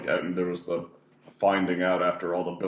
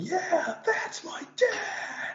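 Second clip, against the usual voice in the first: high-pitched, slow mock yell. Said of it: "hearing her yell".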